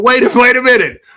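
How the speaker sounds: stunned, high, loud startled double take.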